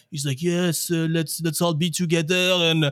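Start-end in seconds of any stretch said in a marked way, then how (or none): 0.4-2.3 put-on heavy French accent, pitched up. Retelling an awkward speech read from paper in front of the factory, do Bruno Famin's thick accent. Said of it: "Thick accent".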